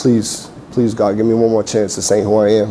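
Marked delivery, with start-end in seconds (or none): none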